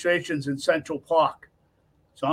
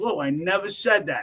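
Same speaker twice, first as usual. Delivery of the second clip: usual speaking voice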